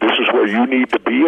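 plain

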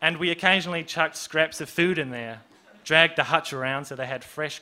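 plain reading voice

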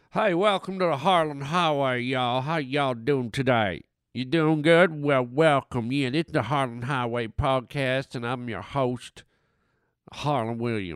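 silly made-up drawling voice. Host welcoming listeners at the top of his show, stupid put-on voice. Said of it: "I don't know why I'm doing this stupid voice".

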